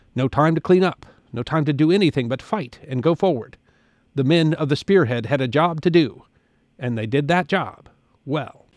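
normal talking voice

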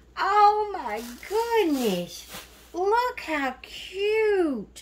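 overwhelmed, high, loud, slow delighted squeal.

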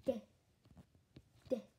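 creepy, scary put-on voice with spooky noises. Echoing the word after relaying a deadly Christmas Eve plan: spooky scary voice. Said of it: "crazy noises, so it's scary".

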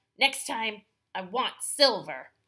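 loud, rough growling bandit voice. Reading a story aloud, a bandit takes one of Luis's books: growling. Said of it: "He takes one and growls".

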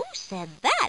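ordinary delivery

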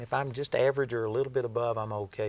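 ordinary delivery

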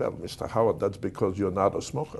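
soft, put-on Polish accent. Speaker quoting a psychiatrist he was seeing, in a Polish accent. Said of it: "with a Polish accent".

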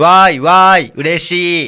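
loud, flat, deadpan monotone with no feeling. Called out as stick-reading by the other speaker: flat monotone reading. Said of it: "棒読み".

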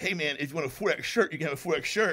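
ordinary delivery

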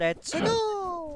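very high, bad fake Italian accent, go stretched out. Saying two words supposedly off-limits because it's Nintendo: bad Italian accent. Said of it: "two words said in a bad Italian accent".

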